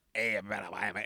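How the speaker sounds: very low, gravelly, growled radio voice. Imitating a hockey-fights satellite radio host: gravelly Scott Farrell voice. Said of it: "He talks like that".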